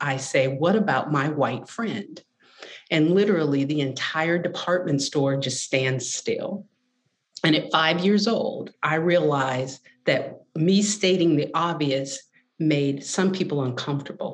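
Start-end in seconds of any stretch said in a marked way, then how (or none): none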